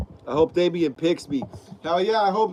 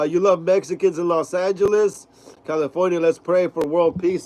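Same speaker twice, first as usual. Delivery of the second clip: plain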